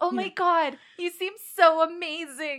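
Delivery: very loud, slow, overdone, gushing fake sincerity. Answering a request to say it with more sincerity: mock sincerity. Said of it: "Say that with more sincerity".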